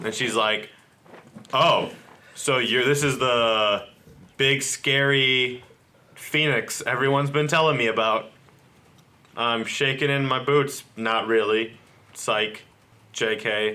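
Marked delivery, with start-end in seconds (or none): none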